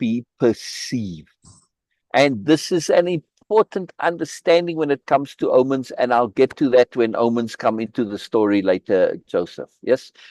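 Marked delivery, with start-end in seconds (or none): 0.0-1.3 P in perceive stressed, spelled out very slowly. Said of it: "another way of saying that is that it is capital".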